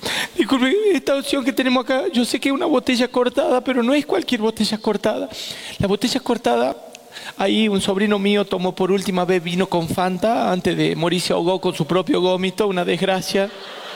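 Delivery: high, choked-up, emotional voice.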